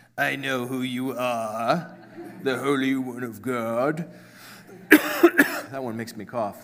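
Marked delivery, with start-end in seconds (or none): 0.2-4.1 put-on, very deep movie demon voice. Trying voices for a demon addressing Jesus, very deep demon voice. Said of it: "Too deep".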